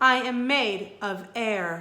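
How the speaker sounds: ordinary delivery, nothing marked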